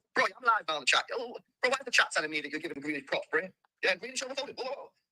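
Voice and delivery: sped-up robotic voice. Playing a voice message back too fast: sped-up robotic voice. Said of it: "made L B sound like a robot".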